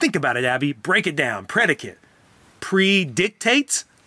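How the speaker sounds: acted condescending, arrogant, know-it-all lecturing tone. Retelling what you said to abby while stalling for time, retelling a condescending tone. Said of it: "saying it in a really condescending, arrogant way".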